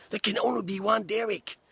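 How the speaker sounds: high-pitched impression voice.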